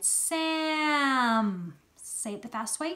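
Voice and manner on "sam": stretched blended sounds, higher and louder. Showing a learner how to slide the sounds of a word together. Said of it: "Remember the top of the slide".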